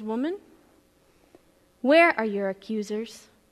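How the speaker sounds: gentle, soft, tender voice. Retelling the scene, Jesus speaking to the crying woman: soft, tender voice. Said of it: "in a soft, tender voice".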